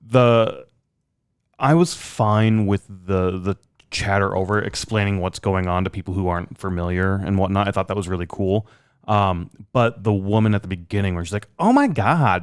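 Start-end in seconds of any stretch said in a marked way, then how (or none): 11.5-12.4 put-on gushing, high Californian Valley Girl voice. Imitate the woman at the beginning whose voice you couldn't stand, in a valley girl voice. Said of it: "like the Valley Girl sort of".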